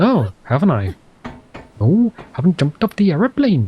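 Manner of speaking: imitated regional accent, sounding Welsh. Acting out what someone will complain about if he skips the jump, put-on Welsh-sounding accent. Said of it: "are you Welsh?".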